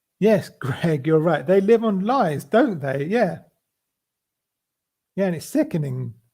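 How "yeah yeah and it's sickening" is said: worked up, getting upset, emotional. Speaker agrees with another speaker, emotional. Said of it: "I'm getting quite emotional about this".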